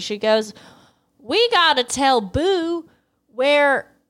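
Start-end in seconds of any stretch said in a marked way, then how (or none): 1.2-3.8 put-on angry Southern accent. Retelling what the angry Southern mom says: put-on angry Southern accent. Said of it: "she also has a Southern accent".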